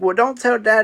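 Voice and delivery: normal talking voice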